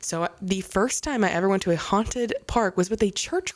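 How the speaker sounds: ordinary delivery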